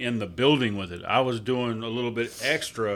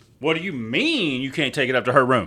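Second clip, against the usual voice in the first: snippy voice with full, total attitude; 4 dB louder than usual. Retelling how an older woman questioned the refusal: imitating someone with total attitude. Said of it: "goes with complete fucking attitude".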